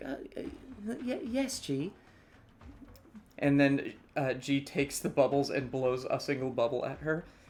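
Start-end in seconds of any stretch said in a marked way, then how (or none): 0.0-1.9 very slow, faltering, frail elf voice. Voicing a very thin, frail elf answering G: voicing a frail elf. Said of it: "she's like".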